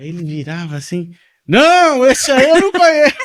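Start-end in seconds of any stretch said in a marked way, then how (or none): 1.5-3.2 high-pitched bellowing shout at full volume. Recounting a man's answer at a hearing, retelling a shout. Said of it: "Mas gritando".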